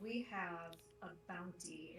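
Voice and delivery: slow, sweet, sugary, charming kitty cat voice. Player character stepping forward to answer a guard, in a charming kitty cat voice. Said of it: "in my most charming, charming kitty cat voice".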